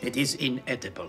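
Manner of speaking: put-on gentle German accent. Playing a scene, complaining the food is overcooked: soft German accent. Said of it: "talk about the German accent".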